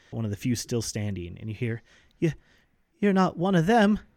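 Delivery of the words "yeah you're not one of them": high, trembling, unsteady, quivering voice. Game master voicing an unseen figure in a nearby building, quivering voice. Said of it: "you hear a quivering voice".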